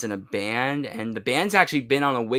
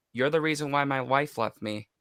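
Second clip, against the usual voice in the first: low-pitched voice, quieter; 4 dB quieter than usual. Retelling a scene where her dad comes in the dark, in a low voice. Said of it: "like in a low voice".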